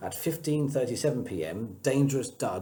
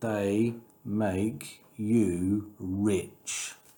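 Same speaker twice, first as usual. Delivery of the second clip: very slow, deliberate, drawn-out words. Reading a story aloud, a character peers into another's eyes and answers very slowly. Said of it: "said very slowly".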